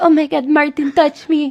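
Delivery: put-on Filipino accent. Speaker quotes the woman he asks to do the accent: Filipino accent. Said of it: "The Filipino accent. She's like".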